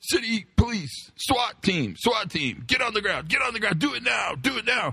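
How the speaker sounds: very high, swooping, barked screaming cop voice. Retelling a SWAT team shouting at everyone from a truck: screaming police officer voice. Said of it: "police officers using their police officer voice".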